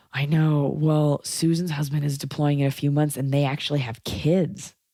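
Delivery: sympathetic, understanding, compassionate tone. Demonstrating a reply to someone whose husband is being deployed; sympathetic tone. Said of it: "read this to you in a sympathetic tone".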